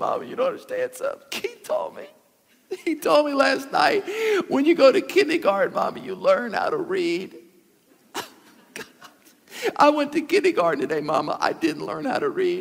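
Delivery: put-on child crying. Retelling coming home from kindergarten, the speaker answers his mom: retelling crying as a child. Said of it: "I'm crying".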